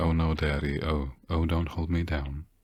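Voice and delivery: flat, robotic, machine-read text-to-speech monotone. Mocking how a text sounds read out by a translator: Google Translate robotic voice. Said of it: "Like you'd ask Google, Google Translator to read out a text going".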